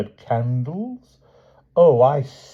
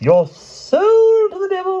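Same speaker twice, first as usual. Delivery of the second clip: very high, shrill, shrieking, loud witch voice; 5 dB louder than usual. Narrator reads the witch's exclamation to Sir Grummore in a shrill witch voice. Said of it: "Exclaimed the witch in a shrill voice".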